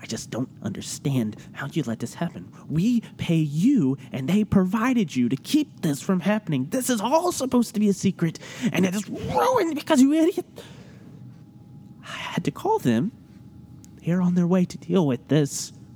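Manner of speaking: fretful, agitated, high, swooping scolding tone. Someone berates a person they pay to keep a secret, very agitated. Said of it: "[name], [name], make sure they do not go anywhere. / And you hear a very agitated voice. / I need some Pepto. Because my stomach is all in knots".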